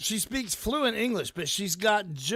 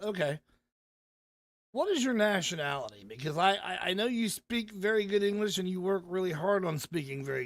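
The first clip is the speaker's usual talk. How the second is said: plain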